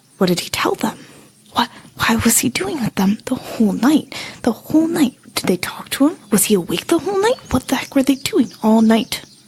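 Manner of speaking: disappointed, grumbling mutter to oneself. A narrator voices a character packing her things, muttering under her breath. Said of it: "muttering under her breath".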